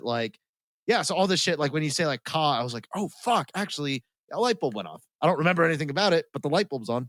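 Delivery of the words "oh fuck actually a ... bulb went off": ordinary delivery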